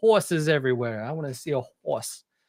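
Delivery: strong put-on Brooklyn accent. Quoting a man he talked with in Louisville, in a strong Brooklyn accent. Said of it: "strong ... Brooklyn accent".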